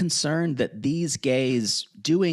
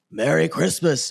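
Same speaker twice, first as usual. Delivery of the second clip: put-on voice, slightly lowered and a bit deeper. Describing a performer's christmas greeting, imitating a slightly lowered voice. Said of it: "they're like a little lower".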